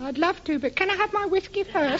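put-on childlike, very high little boy voice. Asked his age, a boy answers the adult questioning him, in a little boy voice. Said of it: "That little boy's voice was brilliant".

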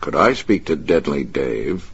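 plain reading voice

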